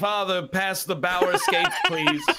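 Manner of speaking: mock rich-heir voice, very high and swooping. Mocking how American hockey players talk, rich Minnesotan heir voice. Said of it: "the son of a Minnesotan like hog empire".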